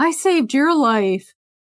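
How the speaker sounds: put-on mushed speech, mouth full of food. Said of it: "some stranger with cookie in his mouth is like".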